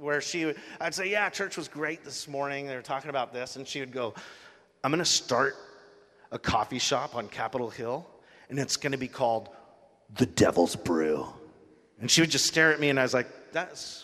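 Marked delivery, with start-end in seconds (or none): 4.8-11.3 low, growly voice with an eerie, creepy tone. Retelling a woman's weird reply after hearing about church, imitating her growly tone. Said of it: "in more of a growly tone".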